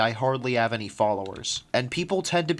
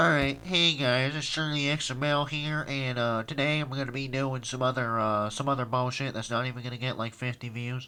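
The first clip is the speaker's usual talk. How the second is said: put-on, heavy stuffy, blocked-nose voice; 3 dB quieter than usual. Joking about a stuffy nose with a mock video intro: put-on heavy stuffy-nose voice. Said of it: "it's not to the degree of".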